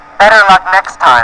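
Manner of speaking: usual speaking voice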